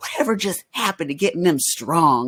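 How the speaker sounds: slight, put-on Southern accent. Retelling what a strength coach told him: imitating Parker's Southern accent. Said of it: "he had this, like, Southern accent".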